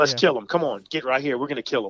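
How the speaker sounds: put-on gung-ho, eager, pushy, bulldozing, charge-ahead kid voice. Retelling what the eight-year-old son says while hunting: imitating an eager, pushy child. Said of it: "my eight-year-old's just a bulldozer. He's like".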